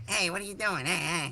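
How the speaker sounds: put-on very nasal, high-pitched New York accent. Asked about their dad's voice, the speaker imitates him: nasal New York voice impression. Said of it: "does your dad actually have like a really nasal voice".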